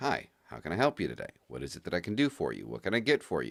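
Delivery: soft, sing-song, very polite, courteous tone. Showing how the speaker answers the business phone line, very polite. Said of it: "Very polite".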